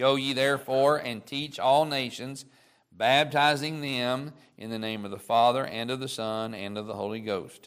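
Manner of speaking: ordinary talk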